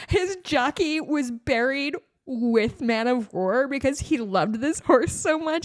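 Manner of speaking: choked-up voice, on the edge of tears. Speaker telling a listener about a racehorse's jockey: choking up. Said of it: "I'm going to cry again talking about it".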